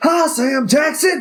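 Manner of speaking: loud yell pitched very high. Imitating Samuel L. Jackson yelling at himself in the mirror: imitating Samuel L. Jackson yelling. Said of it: "looks at himself in the mirror and yells at himself".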